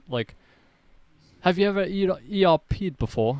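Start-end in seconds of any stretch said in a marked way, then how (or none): 1.4-3.4 put-on mild, easy, light British accent, pitched up. Telling a story, quoting a man in a soft british accent. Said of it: "he has like a soft British accent".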